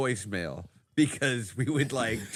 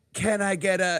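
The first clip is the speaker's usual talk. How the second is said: full-throated, top-of-lungs yell, pitched up; 8 semitones higher, 4 dB louder than usual. Retelling a video of a man yelling out his window at three in the morning, retelling a top-of-lungs yell. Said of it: "at the top of his lungs he goes".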